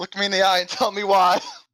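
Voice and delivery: very high, shouted, in-character yell. Confronting a drow in character, holding up a Medusa's head: yelling in character. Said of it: "I will yell out".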